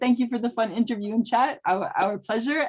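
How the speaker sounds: ordinary talk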